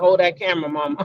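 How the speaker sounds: pained voice. Retelling a video where a mother is filmed: imitating a hurt mother. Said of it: "You can hear in the mama's voice that she is, she is hurt".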